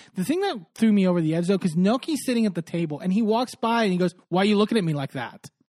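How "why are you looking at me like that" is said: put-on aggressive, genuinely hostile, nasty tone. Retelling what Paul said while walking by: aggressive and nasty, imitating Paul. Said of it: "So aggressive".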